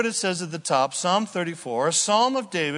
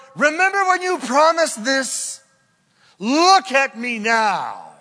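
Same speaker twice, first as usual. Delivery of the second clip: play-acted sarcastic, needling mockery, pitched up and loud; 7 semitones higher, 6 dB louder than usual. Acting out words said mockingly back to the Lord, acting out a mocking retort. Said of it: "mockingly say back".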